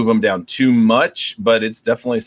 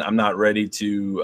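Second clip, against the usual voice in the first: ordinary talk, nothing marked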